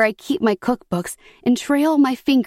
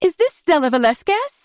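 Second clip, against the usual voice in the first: hyped, amped-up, high excited voice; 6 semitones higher than usual. The Bake Week coordinator phones the narrator, amped up. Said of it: "She sounded amped up".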